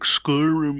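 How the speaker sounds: fake fancy, bougie posh voice. Trying out how to say the word Skyrim, put-on bougie voice. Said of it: "with like a really bougie sort of voice".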